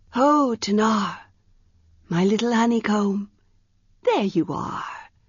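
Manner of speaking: husky voice pitched high like a woman's. A strange figure greets the staring child Tanar: husky, high voice. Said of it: "The voice was husky, high as a woman's voice".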